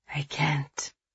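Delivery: whispering. A man answers a woman praying for mercy, whispering. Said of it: "he whispered".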